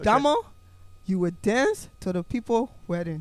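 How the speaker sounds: put-on Liberian English accent. Imitating the other speaker's mom telling them to dance at a wedding: imitating a Liberian accent. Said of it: "when I did the accent just now".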